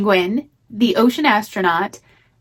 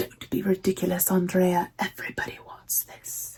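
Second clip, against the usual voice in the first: whispered, breathy character voice; 4 semitones lower, 11 dB quieter than usual. Thanking someone, the speaker quotes a line in the Miranda voice. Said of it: "I have to say it in the Miranda voice from Devil Wears Prada".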